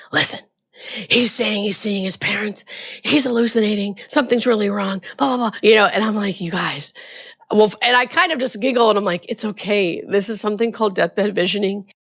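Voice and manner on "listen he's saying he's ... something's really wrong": put-on, hushed whisper. Retelling what a patient's family said to the speaker, retelling a whisper. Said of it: "the family grabs me whispering".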